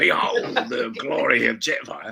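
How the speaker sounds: slow, deliberate, rough-voiced delivery. Telling how he voiced Jetfire, doing Ray Winstone as Jetfire. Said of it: "I'm doing Ray Winston as Jetfire".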